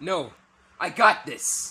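very loud, very slow, shrill, drawn-out yell. Refusing a guest's offer of help with a puzzle, shouting. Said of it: "Stop shouting at our guest!".

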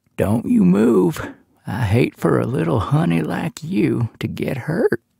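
rough, hard-to-make-out voice. Reading a story, a man pulls a knife and speaks in a gravelly muffled voice. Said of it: "spoke in a gravelly voice".

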